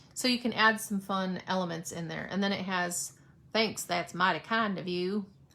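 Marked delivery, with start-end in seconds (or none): 3.6-5.3 easygoing, relaxed Southern American accent. Slipping into it mid-description without meaning to, Southern accent. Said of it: "I just have to say it in a southern accent".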